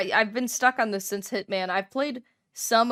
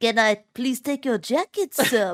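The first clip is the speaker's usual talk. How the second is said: loud, dumb-sounding delivery, as stupid as possible; 3 semitones higher, 5 dB louder than usual. Retelling a game character's line to a friend: imitating a stupid-sounding delivery. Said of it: "he says in the stupidest, stupidest way".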